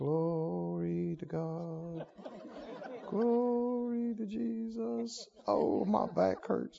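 timid, little, mousy voice, very hushed and slow. Acting out prisoners praising God in jail: mock mousy voice. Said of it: "this little mousy".

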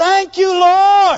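triumphant, loud, high-pitched victorious shout. Showing listeners the right way to shout, shouting. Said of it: "We want to shout".

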